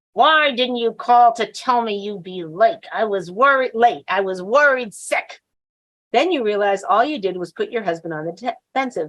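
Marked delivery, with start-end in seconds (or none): 0.2-5.4 reproachful, spoken through clenched, gritted teeth. Showing the ladies how a wife scolds a late husband, through gritted teeth. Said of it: "you say through gritted teeth".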